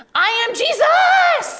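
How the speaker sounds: put-on cute, very high little-kid war cry. Retelling what a boy at bible school recess cried from across the room: imitating a kid's war cry. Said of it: "like a war cry".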